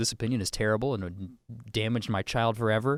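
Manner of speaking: normal talking voice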